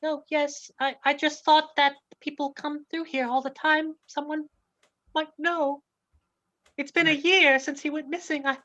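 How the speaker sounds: high, small little lady character voice. Voicing a lady who keeps coming by to hang posters: little lady voice. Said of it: "It's a little lady".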